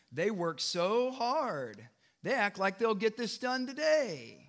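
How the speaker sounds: smug, derisive, self-satisfied mocking tone. Reading an enemy's taunt at the workers' diligence, smug mocking tone. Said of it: "You could say this one with a smug tone".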